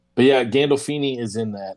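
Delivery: ordinary talk, nothing marked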